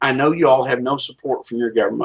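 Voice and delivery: plain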